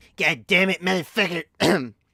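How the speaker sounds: cartoon-character voice, drawn out slowly. Trying out a voice after naming the character: Cartman voice. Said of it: "I can do Cartman".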